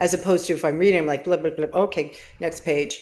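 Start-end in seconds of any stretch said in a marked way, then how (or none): none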